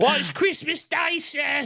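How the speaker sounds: over-the-top, exaggerated, very high street urchin voice. Imitating a little street urchin from the show: exaggerated street urchin voice. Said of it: "I love these exaggerated voices".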